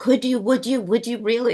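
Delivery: thrilled, hardly-believing, high, overjoyed and eager. Retelling the caller's reply to an offer: imitating an overjoyed caller.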